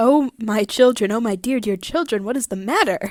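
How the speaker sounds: play-acted, distressed, anguished fussing. Voicing a story's mother asking her crying children what's wrong: put-on distressed voice. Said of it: "the mother is distressed".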